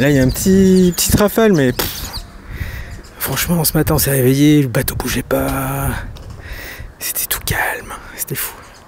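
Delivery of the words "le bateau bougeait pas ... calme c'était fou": hushed whisper. Speaking on a boat lying calm in port after months away: whispering. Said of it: "Même je chuchote".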